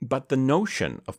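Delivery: ordinary delivery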